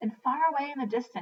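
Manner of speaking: ordinary delivery, nothing marked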